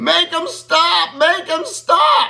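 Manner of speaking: put-on scream, very high and very slow. Telling a joke, acting out the fleeing game warden, imitating a scream. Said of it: "He's screaming".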